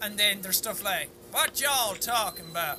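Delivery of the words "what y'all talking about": imitated Southern American accent. Listing american accents, speaker voices someone from down south in southern american accent. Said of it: "We're we down south".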